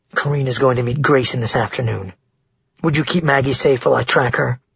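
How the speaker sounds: ordinary delivery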